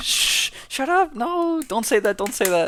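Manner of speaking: embarrassed shushing. Retelling how a girl hushed her friend's praise, imitating embarrassed hushing. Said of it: "Like she's embarrassed to be smart".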